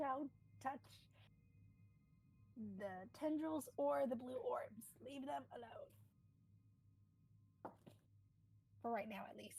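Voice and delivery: slow, drawn-out whisper-yell. A player on their turn warns the party to leave things alone, whisper-yelling. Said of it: "kind of whisper yell kind of to the party".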